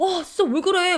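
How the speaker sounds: jumpy, alarmed, high, startled outburst. Retelling how the husband reacted to sudden braking: imitating a startled husband. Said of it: "막 이러면서 혼자 막 놀래가지고".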